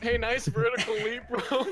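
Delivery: very high, loud holler. Playing a character who teases another's failed jump: shouting across the room. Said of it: "shouts across the room".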